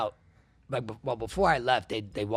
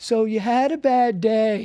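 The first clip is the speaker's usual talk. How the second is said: very high, very loud, drawn-out cocky, chipper cheer; 12 semitones higher, 9 dB louder than usual. Retelling what a cocky cop said while walking past: imitating a chipper cop. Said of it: "he's just all chipper and he goes".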